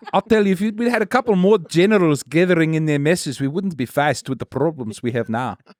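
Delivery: put-on South African accent. Asked to do an accent, doing an impression of a south african. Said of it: "that's an impression of a South African".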